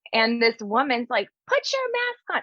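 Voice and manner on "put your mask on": mock yell, very high, shrill and demanding. Describing a video, the speaker quotes a woman yelling at an older man: imitating a woman yelling. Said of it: "like yelling at this man".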